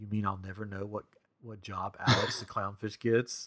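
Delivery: play-acted, completely serious, earnest tone with no joking. Retelling a question put to a comic store worker: retelling a dead serious line. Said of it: "I said it dead serious to his face".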